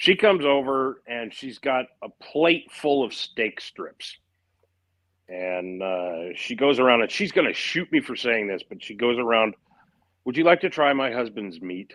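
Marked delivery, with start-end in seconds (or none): 10.2-11.9 put-on deadpan, dry, matter-of-fact delivery. Retelling how Brian's wife offered guests steak strips: imitating a deadpan delivery. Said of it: "just just deadpans this".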